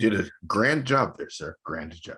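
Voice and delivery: dry, mocking, sarcastic tone. Praising another speaker for finishing quickly: sarcastic praise. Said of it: "We can hear the sarcasm".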